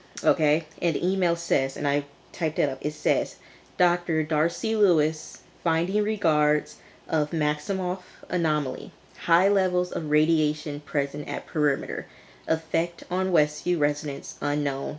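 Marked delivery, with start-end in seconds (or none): none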